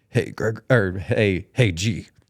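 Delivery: very deep, very slow, drawn-out masked superhero voice. Retelling greeting Greg, who loved Batman, in a deep Batman voice. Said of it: "I started talking like Batman ... in like a deep voice".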